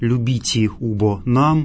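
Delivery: ordinary talk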